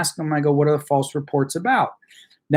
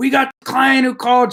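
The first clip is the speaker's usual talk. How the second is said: high, loud, yelled calling out; 9 semitones higher than usual. Retelling how the paralegal called out to the office: imitating someone yelling. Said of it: "she starts yelling out to everybody in the office".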